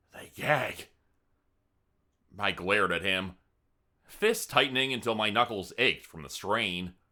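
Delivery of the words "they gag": spoken as a hiss, hissing voice. Reading a story aloud, a character leans forward and speaks: hissing. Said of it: "as he hissed".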